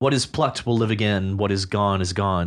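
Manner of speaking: ordinary talk, nothing marked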